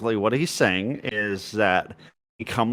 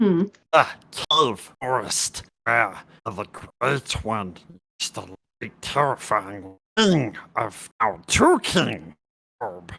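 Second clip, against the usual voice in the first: hard-to-understand goblin voice. Playing a goblin asked where it comes from, answering in goblin voice. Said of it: "just really goblin talk".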